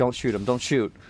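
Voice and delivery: acted-out, loud yelling. Retelling a game moment, the speaker recreates shouting at pt, retelling own yell. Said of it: "I'm yelling at PT like".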